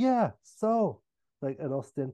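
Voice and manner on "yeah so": put-on, pitched-up, bewildered, uncomprehending tone. Retelling a conversation about his name, playing the other man as mock-uncomprehending. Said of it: "And he's uncomprehending".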